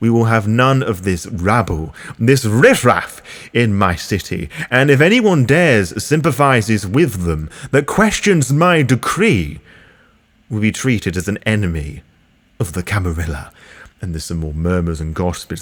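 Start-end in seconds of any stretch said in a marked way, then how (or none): 0.0-13.5 vampire prince character voice. Voicing the prince addressing the court and calling for the Anarchs' destruction: voicing the vampire prince. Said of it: "I imagine the prince then begins".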